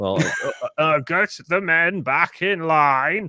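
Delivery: put-on drawled Yorkshire accent. Acting out an actor who tries posh British but can only do Yorkshire, Sean Bean voice, Yorkshire accent. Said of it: "I can only do Yorkshire".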